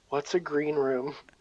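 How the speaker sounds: soft, secretive half-whisper. Half-whispering a question in Twain's ear as he walks away: half-whispering. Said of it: "I'm gonna whisper in Twain's ear".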